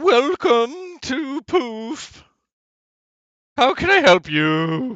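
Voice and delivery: very high, very loud, overeager and excitable voice. Narrating a scene, the speaker voices the clerk greeting visitors: excitable shop clerk. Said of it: "a very excitable clerk behind the counter who says".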